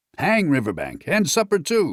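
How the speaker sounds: jovial, cheerful, hearty voice, high and swooping. Reading a story aloud, a character brushes off worries: hearty. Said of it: "said the Rat heartily".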